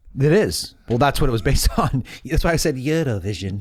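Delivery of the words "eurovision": put-on Swedish accent. Explaining why they brought up Eurovision in conversation: Swedish accent. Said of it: "that was my Swedish accent".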